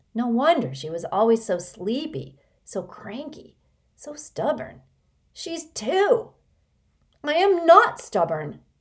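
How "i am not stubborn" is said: firm, high, raised insistent voice. Constance, almost three, overhears Sticky calling her stubborn, insisting. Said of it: "insisted Constance".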